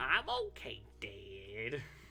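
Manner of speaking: put-on cartoon boy voice. Rereading a line aloud in another voice: Bobby Hill voice. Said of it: "I was reading that like Bobby Hill".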